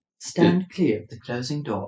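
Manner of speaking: put-on British accent. Imitating a London Underground train announcement: British accent. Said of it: "Then we've got a British person on today?".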